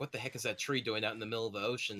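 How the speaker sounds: ordinary delivery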